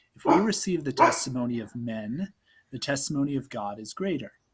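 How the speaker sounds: plain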